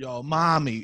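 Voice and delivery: put-on tough-sounding voice. Challenged to make a line sound tough, trying to sound tough. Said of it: "make it sound tough".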